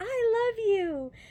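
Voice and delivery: high, loud, slow distant call. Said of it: "and she's like".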